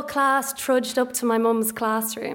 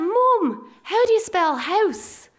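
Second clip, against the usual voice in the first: put-on slow, drawn-out shout; 7 semitones higher than usual. Retelling how a loud classmate called out in a silent lesson: imitating a classmate shouting. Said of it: "he just shouted out".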